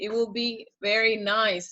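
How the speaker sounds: ordinary talk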